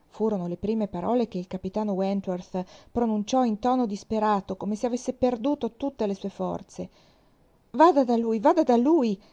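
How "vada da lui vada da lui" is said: loud, high-pitched shouting. A woman supporting a fallen girl urges a captain to help: shouting. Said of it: "gridò Anne".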